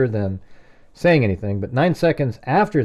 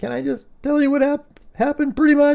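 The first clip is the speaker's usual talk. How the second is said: distressed, upset, very high-pitched voice; 14 semitones higher than usual. Retelling a 911 call, imitating Dylan in a really upset voice. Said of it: "in a really upset voice".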